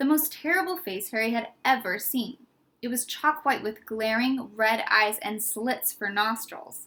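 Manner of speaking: ordinary delivery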